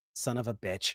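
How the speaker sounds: dismayed, soft, low muttered delivery.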